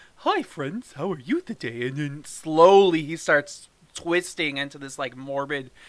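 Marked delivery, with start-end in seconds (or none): 0.2-1.9 put-on friendly clown voice. Comparing versions of the clown, speaker shows how the new one sounds: friendly new Pennywise voice. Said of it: "more approachable... he actually sounds like".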